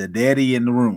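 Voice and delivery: ordinary talk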